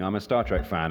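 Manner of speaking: ordinary talk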